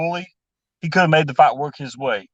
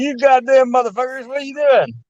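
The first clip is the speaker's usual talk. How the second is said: loud Southern-accented holler; 9 semitones higher than usual. Asked by another speaker to perform, he delivers it yelling in a southern accent. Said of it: "yell in a southern accent".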